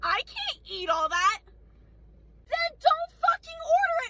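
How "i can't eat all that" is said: mock scornful, dismissive scoffing voice. Retelling a restaurant customer's reply about the portion: imitating a customer scoffing. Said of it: "she scoffs again. She goes".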